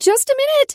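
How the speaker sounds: shrill, very high, loud, high-pitched. Reading a story, a character calls through a door: high-pitched voice. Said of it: "I called in a high-pitched voice".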